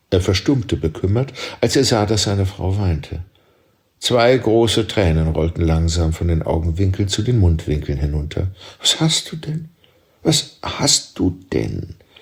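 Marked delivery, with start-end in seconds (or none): 8.8-11.9 halting, stumbling, faltering, slow and high. Narrator voicing a husband asking his weeping wife what is wrong, faltering. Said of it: "fragte er stockend".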